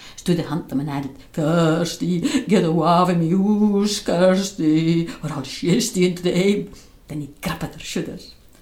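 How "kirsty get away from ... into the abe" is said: loud, slow, put-on croaky ghostly voice. Narrator reading a character pretending to be a ghost to scare another, in a croaky ghost voice. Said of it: "He pat on a croaky voice".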